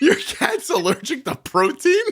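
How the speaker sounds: very high voice, choking back laughter. Asking another speaker about their cat's allergy, stifling laughter. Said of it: "trying not to laugh".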